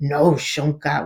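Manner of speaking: deep, put-on adult scolding voice. Parent recalling their oldest son scolding the family puppy, imitating a really deep voice. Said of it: "saying this really deep voice".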